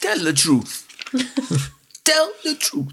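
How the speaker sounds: very high-pitched, swooping, sing-song, insistent pleading tone. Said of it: "that was a little bit of an impression of [name]".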